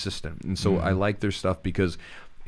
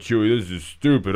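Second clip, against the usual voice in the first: loud, scoffing, mocking skeptic voice; 6 dB louder than usual. Speaker imitates a listener on the fence about breathing, in a mocking skeptic voice. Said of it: "I've been doing a lot of voices today".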